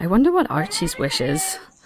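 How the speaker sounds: quiet, hushed half-whisper. Narrating the game scene, the speaker voices Octavia talking to a companion: Octavia half-whispering. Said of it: "she whispers to Flopsy".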